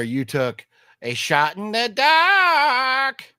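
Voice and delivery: put-on Australian accent, very high, very slow, wailing. Talking about a movie, show off your Aussie impersonation and then ask whether it was good. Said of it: "That's my Aussie impersonation".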